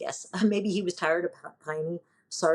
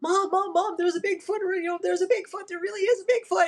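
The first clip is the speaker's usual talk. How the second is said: very high, frantic, rattled-off panicked outburst. Retelling a childhood car ride after a radio report: retelling panicked childhood outburst. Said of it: "losing my mind in the backseat of the car going".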